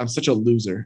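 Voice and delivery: put-on mumble under breath. Retelling a remark made while someone was leaving: imitating a mumble under breath. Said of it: "I mumbled under my breath".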